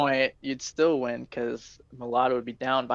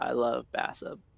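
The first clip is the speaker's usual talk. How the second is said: ordinary talk, nothing marked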